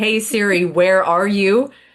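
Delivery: put-on, loud, slow, drawn-out hollering. Retelling calling out to find a misplaced phone: retelling a really loud call. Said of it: "really, really loudly".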